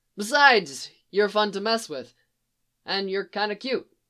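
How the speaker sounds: usual speaking voice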